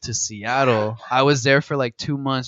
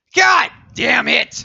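put-on angry yell, much higher, louder, slower; 8 dB louder than usual. Describing grandpa reacting to the news, the speaker imitates grandpa yelling angrily. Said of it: "say it like that".

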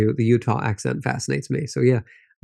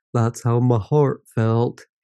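put-on weird Southern accent. Retelling a joke about the gloomy wedding day: imitating Mary's weird Southern accent. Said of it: "puts on some sort of weird Southern accent".

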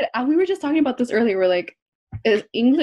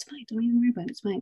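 soft little devil voice, half-whispered; 8 dB quieter than usual. Retelling what was said during recording, imitating a half-whispering little devil. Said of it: "I'm all whispering. I'm like the little devil".

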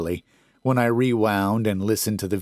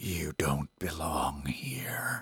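low, hoarse, raspy voice, slow and deliberate; 4 semitones lower, 11 dB quieter than usual. Reading a ghost story, the unseen voice warns the narrator: low raspy voice. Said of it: "it said in a low, raspy voice".

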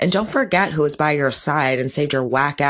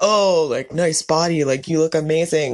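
mocking, insincere, sarcastic fake-sweet tone. Acting out someone insulting a pregnant woman, imitating a sarcastic compliment. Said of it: "Like sarcastically".

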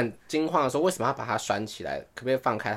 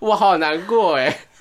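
speaking through laughter; 6 semitones higher, 9 dB louder than usual. Recounting an absurd dream to a listener, said while laughing. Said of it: "我好难过，是笑着讲哎".

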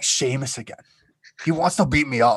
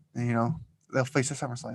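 normal talking voice

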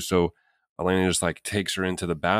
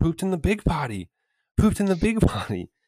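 put-on very high, swooping, hyped-up toddler hollering; 11 semitones higher than usual. At the zoo, the child yells out to strangers: retelling a yell. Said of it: "she's just like yelling it out to strangers".

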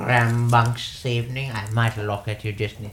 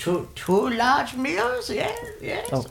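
put-on little old halfling woman voice, much higher. Voicing a character in a roleplaying game, a little old halfling woman. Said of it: "And it's just like little old halfling woman".

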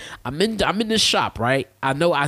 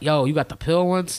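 mocking rude, attitude-filled tone; 3 semitones higher than usual. Retelling how the other speaker asked for the pills: imitating someone with an attitude. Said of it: "he definitely had an attitude".

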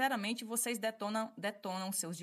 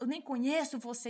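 mock shout in woman's voice, much higher; 4 semitones higher, 4 dB louder than usual. Retelling what a woman shouted during a confrontation, imitating her shout. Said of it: "isso ela gritando".

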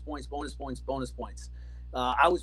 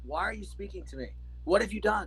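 put-on straight-faced, dead serious delivery, pitched high; 5 semitones higher than usual. Speaker retelling what a man said to them, imitating a deadpan delivery. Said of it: "he would say it with such a straight face".

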